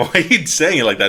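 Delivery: high, loud, laughing, teasing delivery.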